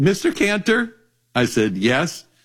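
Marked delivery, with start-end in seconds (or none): 0.0-0.9 put-on little girl voice, much higher pitch. Retelling how a nine-year-old girl opened a phone call, in a high-pitched nine-year-old voice. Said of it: "in this high-pitched 9-year-old voice".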